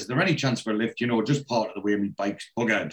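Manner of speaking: normal talking voice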